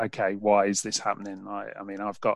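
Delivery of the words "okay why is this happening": ordinary talk, nothing marked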